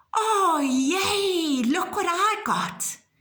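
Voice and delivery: very high, very slow, delighted, surprised exclamation. Teaching exclamation marks with the example of opening a present, surprised exclamation. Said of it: "you are surprised".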